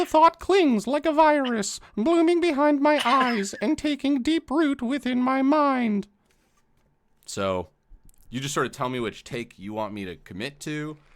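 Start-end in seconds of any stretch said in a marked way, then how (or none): 0.1-6.1 very high, loud, shrill cartoon mouse voice. Narrator reading a passage from a book aloud, in a Mickey Mouse voice. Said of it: "That was absolutely a Mickey Mouse voice".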